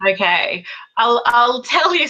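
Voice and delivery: words broken up by laughter, talking through a laugh. Starting to describe a typical week, laughing while talking. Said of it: "I'm laughing".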